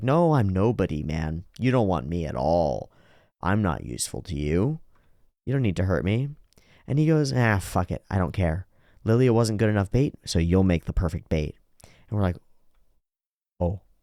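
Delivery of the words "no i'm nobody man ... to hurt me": put-on sniveling, whiny, begging tone. Retelling a story where Rudy starts telling the truth, imitating Rudy's sniveling plea. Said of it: "he's doing it in a sort of a sniveling way".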